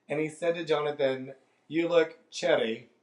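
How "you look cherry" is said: imitated Scottish accent. Speaker retells what a stranger said to Jonathan, imitating a Scottish accent. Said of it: "He had a Scottish accent".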